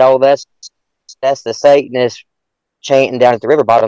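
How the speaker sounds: normal talking voice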